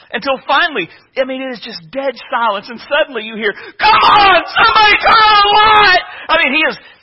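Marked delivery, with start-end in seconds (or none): 3.5-6.0 shrill, very high, loud, drawn-out panicked scream. Retelling a specialist's panic attack in a dark tunnel: imitating a panicked scream. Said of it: "He's screaming".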